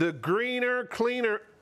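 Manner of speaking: very high, put-on American accent. Naming a cleaning product: American accent. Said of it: "better in an American accent".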